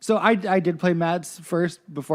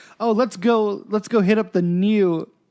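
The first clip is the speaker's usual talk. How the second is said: forced casual, trying-hard, too-cool cool-guy delivery; 3 semitones higher, 3 dB louder than usual. Retelling how a game character tries to impress Matt: imitating someone trying to sound cool. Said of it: "he's trying to, like, sound real cool".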